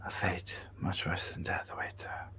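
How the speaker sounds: whispered just loud enough to hear. Narrating a game, a character leans in to answer the players: whispering. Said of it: "whispers just loud enough for you to hear".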